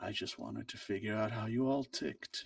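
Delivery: sneaky, soft, hushed muttering. Game master voicing a character sneaking something under his poncho, in a soft mutter. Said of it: "now sort of a softer mutter".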